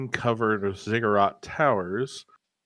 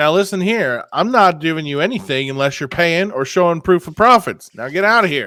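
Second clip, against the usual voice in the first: very loud raised voice; 6 semitones higher, 10 dB louder than usual. Game master voicing her answer to a player's intimidation check: raised voice. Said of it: "kind of raises her voice and says".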